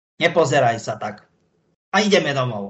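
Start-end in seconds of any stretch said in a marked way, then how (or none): 2.0-2.7 sharp, brisk, firm, curt tone. Demonstrating how to speak to a small child in a sharp, curt, firm tone. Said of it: "A to teraz tak ostro, rázno, neodmietavým tónom".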